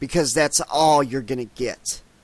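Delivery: snarled, defiant delivery. A narrator reads a woman's line to her new commanding officer, snarling. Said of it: "she snarled".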